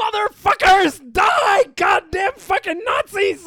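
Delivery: screeching yell, very high-pitched and very loud. Telling a story about a man next to the stage during a show: retelling a yell. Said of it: "And he's yelling".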